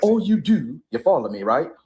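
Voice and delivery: American vernacular accent. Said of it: "do the accent".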